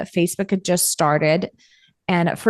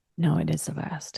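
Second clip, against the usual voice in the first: hushed whisper, much quieter; 3 semitones lower, 9 dB quieter than usual. Describing rare time alone in the house, the speaker is whispering. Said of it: "we're whispering".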